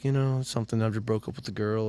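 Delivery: put-on sad kid voice acting tough. Retelling a movie scene, imitating a sad kid acting cool. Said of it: "he's all sad, and he's trying to act cool".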